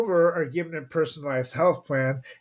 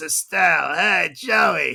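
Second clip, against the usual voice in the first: rough, creaky put-on agent-style voice. Imitating Joey's agent from Friends: Estelle from Friends voice. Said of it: "when she talk like this".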